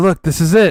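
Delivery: hushed, whispering voice. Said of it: "And why are you whispering?".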